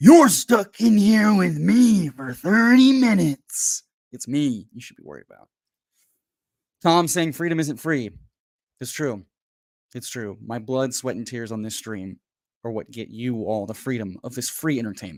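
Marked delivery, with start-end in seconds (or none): 0.0-5.5 put-on wrestling announcer voice, higher and louder. Doing a Bonesaw impression from Spider-Man for the chat: Bonesaw impression from Spider-Man. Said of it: "let me do my best bone saw impression".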